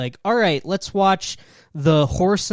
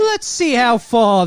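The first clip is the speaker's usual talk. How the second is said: horrible, slow put-on Australian accent; 6 semitones higher, 4 dB louder than usual. Quoting someone's remark about a clip, in a horrible Australian accent. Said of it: "This is a horrible Australian accent".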